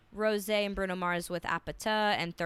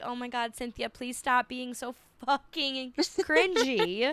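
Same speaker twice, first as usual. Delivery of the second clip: mock giggling while talking, higher pitch; 4 semitones higher than usual. Retelling a reaction to a nomination, imitating someone giggling. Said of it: "she's kind of giggling, like".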